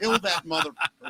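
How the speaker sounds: toned-down woman's half-scream. Retelling how a grandmother at a wrestling match screamed: imitating a screaming grandmother. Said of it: "She screams".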